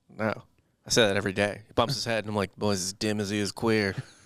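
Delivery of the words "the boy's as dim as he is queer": put-on, parody Saint Louis dad accent. Quoting a bigoted father's line when someone bumps his head: imitating a dad in Saint Louis accent. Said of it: "I do it in a Saint Louis accent".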